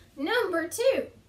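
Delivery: plain conversational American accent. Announcing the next numbered point, in an American accent. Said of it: "That was an American accent".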